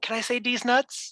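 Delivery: sly, sneaky, hushed half-whisper. Retelling how he would half-whisper it to the teacher: retelling a half-whisper. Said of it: "he would just like whisper it to the teacher".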